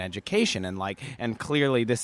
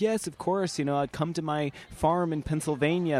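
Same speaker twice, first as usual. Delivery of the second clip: higher-pitched, friendly, inviting mentor voice; 7 semitones higher than usual. Retelling a mentor's reply to an invitation: Jan Cohen Cruz impression. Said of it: "That's my Jan Cohen Cruz impression".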